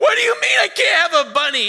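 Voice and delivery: put-on hysterical, high, loud wailing, crying child voice.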